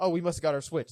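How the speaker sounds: ordinary talk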